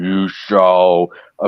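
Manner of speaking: low, deep, booming giant villain voice.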